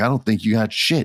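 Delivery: ordinary delivery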